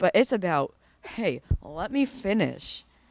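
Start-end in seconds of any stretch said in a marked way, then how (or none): 1.0-2.8 very slow, hostile, aggressive delivery. Retelling own words when asked to do more mid-task: imitating an aggressive tone. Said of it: "sounding really aggressive".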